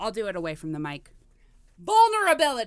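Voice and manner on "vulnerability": full-throated, loud, very high-pitched scream. Showing the only way they could once say it: screamed vulnerability. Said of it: "if I screamed it like this".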